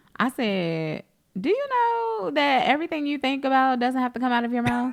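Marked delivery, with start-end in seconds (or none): 1.4-5.0 mock, pitched-up voice dripping with sarcasm. Repeating own past remark to an adult, as asked: imitating own sarcastic remark. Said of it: "so sarcastic".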